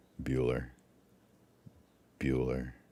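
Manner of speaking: very quiet, very soft, flat droning monotone. Speaker illustrates monotone speaking, as Ferris Bueller's teacher monotone. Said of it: "Are you monotone?".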